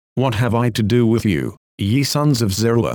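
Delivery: ordinary talk, nothing marked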